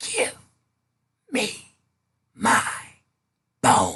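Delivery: put-on very slow, small, low, teeny tiny voice. Storyteller reads the voice from the cabinet speaking to the woman, teeny tiny voice. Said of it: "heard a teeny tiny voice".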